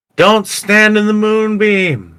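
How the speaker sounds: yelling as loud as possible, very high. In a tabletop game, a player's character yells out on their turn: yelling as loud as possible. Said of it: "I'm gonna yell out like as loud as I can".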